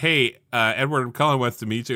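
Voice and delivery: ordinary talk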